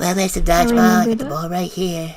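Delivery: creepy, high-pitched put-on character voice. Re-trying their first fandub line as Sneech holding up a ball, creepy Sneech voice. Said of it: "It makes me sound creepy".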